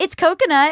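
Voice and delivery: rising upward lilt at the end of coconut. Imitating people who offer coconut snacks: rising uptick in the voice. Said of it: "do this uptick in their voice".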